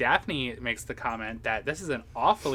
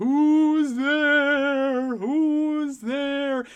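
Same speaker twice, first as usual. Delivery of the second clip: very high, very slow, loud, spooky, ominous call; 8 dB louder than usual. Recapping a scene where a gargoyle carving on a gate speaks, retelling an ominous gargoyle voice. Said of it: "it just says in a very ominous voice".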